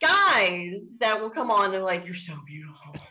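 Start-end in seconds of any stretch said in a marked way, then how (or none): 2.0-2.9 very soft, hushed, all heavy-breath delivery. Imitating guys who comment on selfies: imitating a heavy-breathing guy. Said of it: "all heavy breath".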